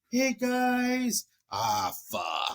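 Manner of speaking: put-on squeaky, very high five-year-old voice. Retelling a young kid heard swearing while playing Warzone, little kid voice. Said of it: "He's like a little five year old, just like".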